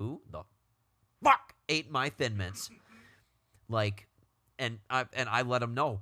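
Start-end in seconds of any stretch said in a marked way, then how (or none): 0.0-2.7 fed-up, raised, swooping, angry outburst. Acting out confronting people who ate the speaker's thin mints, with voice raised a little. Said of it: "raise my voice a little bit".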